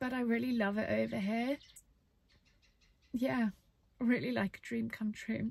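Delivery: speaking while crying, voice tearful. Sharing feelings about a big, scary change: crying while talking. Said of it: "And now I am crying".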